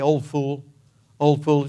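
put-on Norwegian accent, under breath. Recalling a grandmother's words about a dancer, in a muttered Norwegian brogue. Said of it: "in her norwegian brogue under her breath she would say".

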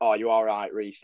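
plain

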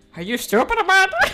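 very loud, booming, high put-on Irish accent. Asked the difference between two accents, demonstrating an Irish accent. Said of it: "this is an Irish accent".

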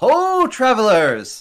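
grand, loud, high-pitched circus ringmaster call. Voicing a circus ringleader calling out to travelers on the road: calling out as circus ringleader. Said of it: "someone out front calls".

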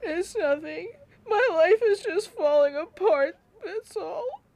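crying through the words. Answering someone who noticed the tears and asked what's wrong, crying. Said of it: "You're crying".

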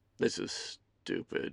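hushed, whispered mutter under the breath. Reading a man giving up on an app on his phone, muttered. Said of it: "Ethan muttered aloud".

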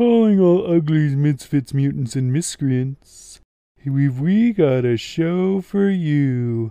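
deliberately horrible donkey voice. Joking with a co-host about puppets, doing a horrible Eeyore impersonation. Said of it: "my horrible Eeyore impersonation".

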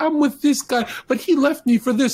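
put-on very high, upset, emotional girl voice. Retelling girls being emotional at a party: imitating an emotional girl. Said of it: "There'll be girls being emotional at a party".

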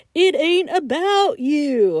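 slow, loud, deliberate delivery. Retelling a husband's impression of a TV therapist: imitating husband's Doctor Phil impression. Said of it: "my husband does this really great impression of him going".

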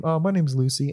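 put-on country accent. Retelling meeting a woman while having drinks with a cousin: Lucy's country accent. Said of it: "doing the whole country thing again with her fucking voice".

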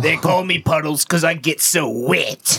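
put-on off-putting, gross-sounding British accent. Retelling what a British woman said to him in bed: gross British accent. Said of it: "She had that gross accent, not the sexy British one".

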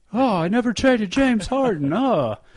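very high-pitched, loud outburst. Playing Presti in an It's a Wonderful Life parody: Jimmy Stewart impression. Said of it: "You like that impression?".

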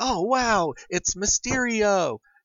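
high, slow, awed gasp. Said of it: "look at him and go like".

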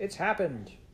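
high, fierce outburst. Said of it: "You sound very fierce".

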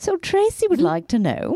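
very high, swooping, fake British accent. Starting to read out a listener's email: put-on British accent. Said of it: "I love the accent. Is she British".

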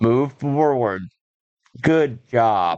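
low, flat android monotone with zero feeling. Imitate Colin McRae helping you learn to rally drive, in an emotionless Colin McRae voice. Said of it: "he's like an emotionless android in this".

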